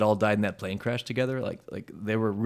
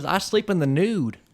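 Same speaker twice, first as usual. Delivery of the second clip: slow, pitched-up southern drawl; 8 semitones higher than usual. Quoting the cowboy from Pee-wee's Playhouse: Laurence Fishburne southern accent. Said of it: "doing a sou-, southern accent like that".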